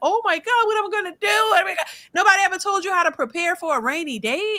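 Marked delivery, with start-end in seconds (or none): 0.0-1.9 put-on childish, high, panicky whining. Mocking people who just lost their jobs: imitating childish panic. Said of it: "They crashing out like little children".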